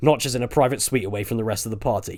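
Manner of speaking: ordinary delivery, nothing marked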